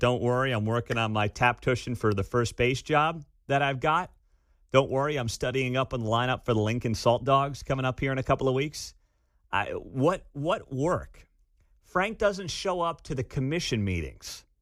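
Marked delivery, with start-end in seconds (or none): none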